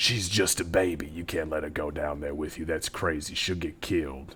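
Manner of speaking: low, unnaturally loud stage whisper. Grandpa Herman whispers to Doc, in Grandpa Herman's loud whisper. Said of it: "in a very unnaturally loud whisper as uh old Grandpa Herman".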